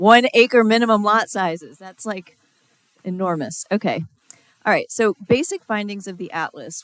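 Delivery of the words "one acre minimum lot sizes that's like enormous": yelling, very loud shouting. Speaker presenting the Atlas findings, shouting.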